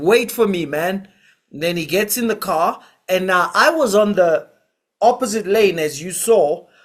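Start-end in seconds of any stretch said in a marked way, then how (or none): 0.0-1.1 put-on Zimbabwean accent. Retelling a fleeing driver calling to his friend, Ndebele Zimbabwean accent. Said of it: "It's like in Ndebele Zimbabwean accent".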